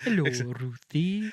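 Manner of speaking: loud put-on Welsh accent. Quoting a jester character's greeting, Welsh accent. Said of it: "That's all I can say in Welsh".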